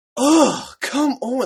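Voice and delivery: very high, very loud, shrill, sighing exasperated yell. Retelling how a woman reacted when the speaker's attempt failed, imitating an exasperated yell. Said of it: "yelled at me".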